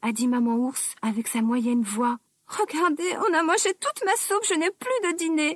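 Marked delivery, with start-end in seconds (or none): 2.5-5.6 tiny, high-pitched crying, sobbing voice. Narrating the three bears story, voicing Baby Bear crying in a tiny voice. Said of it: "en pleurant avec sa toute petite voix".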